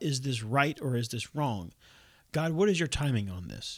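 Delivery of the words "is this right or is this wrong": plain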